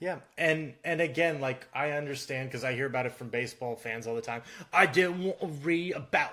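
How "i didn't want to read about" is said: put-on English accent, higher. Imitating baseball fans complaining about statistics: imitating baseball fans in an english accent. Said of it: "not that they're doing it in an English accent".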